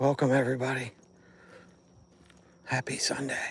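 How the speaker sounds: hushed whisper. Greeting viewers while trying to sneak up on a buck: whispering. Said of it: "I'm whispering because I'm trying to sneak up".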